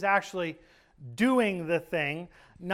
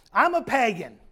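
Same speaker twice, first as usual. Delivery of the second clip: mock proud, boastful tone; 3 semitones higher, 5 dB louder than usual. Retelling what a woman announced at fellowship, mimicking her proud announcement. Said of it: "she announced proudly".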